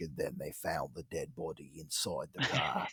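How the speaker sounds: hushed, very deep, soft, smooth Australian murmur. Showing how the anonymous podcast host always talks, do a smooth Australian Casefile host voice. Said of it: "his voice is like so like smooth Australian".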